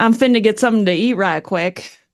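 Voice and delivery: speaking in a put-on Texas accent. Recalling a phrase remembered from living in Texas, in a Texan accent. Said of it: "I'm sorry to my Texas listeners if I just sound terrible".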